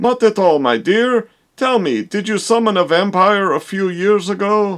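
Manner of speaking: put-on old-man mad scientist vampire hunter voice. Playing the doctor in a scene, answering a worried woman: mad scientist vampire hunter voice. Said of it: "It's just that you look more like a mad scientist vampire hunter type. / [name]. / boring old man stuff".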